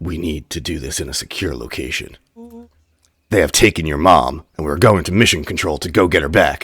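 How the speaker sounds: deepened, put-on character voice. Reading a character's lines about a secure location: Rollo's deeper voice. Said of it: "Notice my voice has gone deeper in octaves".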